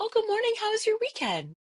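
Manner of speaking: very high, prim, polite office voice. Retelling answering a coworker's greeting mid-phone-call, switching into her office voice. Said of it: "That's my office voice".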